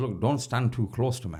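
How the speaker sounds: ordinary talk, nothing marked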